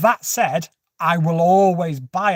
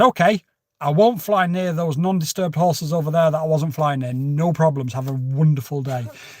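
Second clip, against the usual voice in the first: ordinary talk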